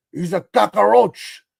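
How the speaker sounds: bad put-on Cuban accent. Mocking the accent in Scarface, do Al Pacino's bad Cuban accent. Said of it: "the all-time worst Cuban accent".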